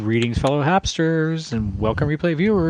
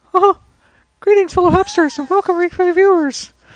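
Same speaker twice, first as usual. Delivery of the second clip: put-on cartoon mouse voice; 6 dB louder than usual. Asked by the other speaker to say the greeting again: Mickey voice. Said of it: "Go say it like Mickey".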